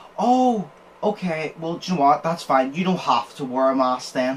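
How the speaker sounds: thick, acted sarcasm, falsely agreeable tone. Retelling how the guy behind the counter responded: acting out sarcastic reply. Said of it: "I'll need to say it sarcastically so you understand what I mean".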